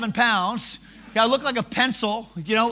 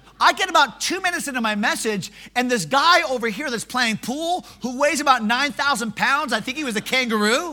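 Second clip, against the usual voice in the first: normal talking voice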